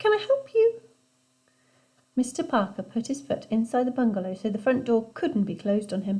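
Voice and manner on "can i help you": squeaky, very high-pitched voice. Reading a story aloud, a boy answering the front door: squeaky high voice. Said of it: "said Ben in a squeaky high voice".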